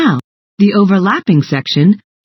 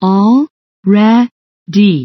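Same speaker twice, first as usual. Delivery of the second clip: already split into separate syllables, sounded out. Showing how to sound out a word: sounding out syllables. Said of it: "so let's try it again".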